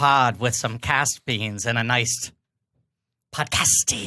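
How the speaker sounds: low, serpent-like hiss through the words. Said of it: "You just sounded like you were a snake".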